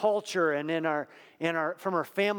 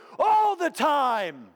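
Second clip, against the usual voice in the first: put-on very high, booming, loud preacher-style English accent; 9 semitones higher, 5 dB louder than usual. Recalling church services, the speaker quotes the preacher John Guest in a big English accent. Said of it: "with this big English accent".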